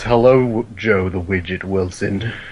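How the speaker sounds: low, creepy voice. In role-play, answering a greeting as Mr. Sheep: deep, creepy Mr. Sheep voice. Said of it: "It's all deep and creepy compared to other sheep voices".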